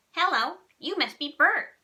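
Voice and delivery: high, loud, big puppet voice. At the bathroom sink, a boy greets the narrator in his best Sesame Street Ernie voice. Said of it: "he said in his best Sesame Street voice".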